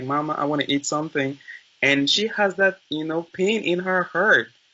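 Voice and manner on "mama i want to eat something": put-on baby crying voice. Acting out a baby speaking to its mother: imitating a crying baby. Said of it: "the baby is crying like".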